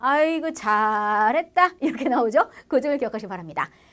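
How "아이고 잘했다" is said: sarcastic, mocking delivery with sarcastic intonation. Speaker demonstrating how the same words sound when used ironically, sarcastic intonation. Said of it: "요거 억양이 달라 … 비꼬면 어떻게 돼?".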